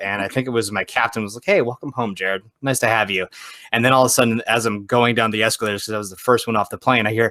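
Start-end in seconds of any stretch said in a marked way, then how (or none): none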